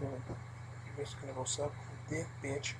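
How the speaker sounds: very low, hushed, under-the-breath whispered mutter. Retelling what a coworker said to a customer: imitating someone saying it very low. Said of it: "he says very, very low".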